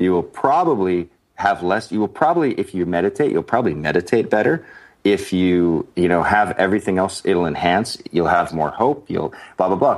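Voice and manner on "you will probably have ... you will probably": ordinary delivery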